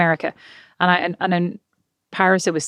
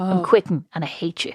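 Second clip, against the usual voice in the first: put-on French accent. Retelling what a departing employee said: put-on French accent. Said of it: "And obviously not in that accent".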